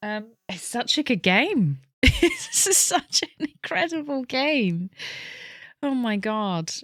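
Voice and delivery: tearful, high crying speech. A player nearing the end of a game, crying while talking. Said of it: "I'm actually crying here".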